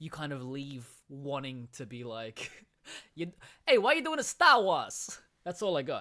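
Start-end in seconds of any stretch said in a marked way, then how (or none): 3.7-5.2 put-on Boston accent, very high, loud and shrill. Urged to try, attempting a boston accent. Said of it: "please, please try".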